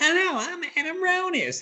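very high, drawn-out, way-off put-on voice. Retelling how Nando mimicked the speaker: imitating Nando's impression of Adam. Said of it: "he's like".

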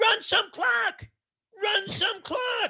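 drawn-out, very loud, high-pitched guttural scream. Retelling how a guy stood up at the start of the game: retelling a guttural scream. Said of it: "he starts screaming".

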